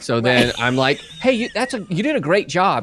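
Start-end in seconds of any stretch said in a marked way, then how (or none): 1.2-2.8 voice rising to a much higher, raised tone. Explaining how they get past the roadblock of their face, in a high-pitched tone. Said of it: "when I hit that tone, when I go up here".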